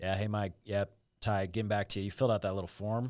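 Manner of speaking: dull, flat, bored monotone drone. Acting out a sales guy's follow-up call, imitating a bored monotone. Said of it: "It's like very right. boring, yeah. monotone".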